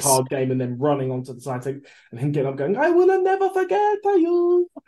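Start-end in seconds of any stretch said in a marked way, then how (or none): 2.8-4.7 exaggerated Italian accent, high and slow. Quoting a film character leaving on Titanic: Fabrizio's exaggerated Italian accent. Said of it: "That's how you do a Mario accent".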